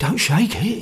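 hoarse, rasping whisper. Narrator reading a story; a man sees a bottle brought out, hoarse whisper. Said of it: "he whispered hoarsely".

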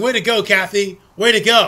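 plain

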